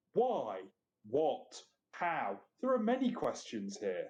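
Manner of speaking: snide, condescending sarcasm with swooping pitch. Playing a character being looked at closely and questioned: very sarcastic and condescending. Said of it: "I say in a very sarcastic and condescending voice".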